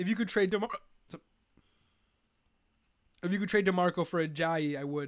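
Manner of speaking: speech broken up by hiccups. Giving fantasy football advice while hiccuping while talking. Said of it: "Here come the hiccups".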